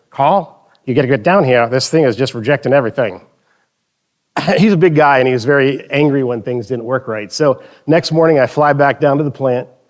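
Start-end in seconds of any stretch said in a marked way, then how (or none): 0.2-3.3 put-on Southern Mississippi accent. Retelling a phone call from the plant manager, in a Mississippi accent. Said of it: "I'll do my best Mississippi accent".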